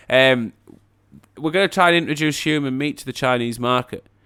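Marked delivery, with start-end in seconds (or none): none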